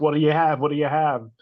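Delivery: acted-out, loud, impatient, pushy hollering. Retelling being screamed at while ordering food: imitating someone screaming. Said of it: "screaming at you".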